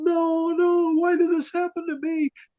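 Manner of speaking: very high, freaked-out mock scream. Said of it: "she freaked out and started screaming".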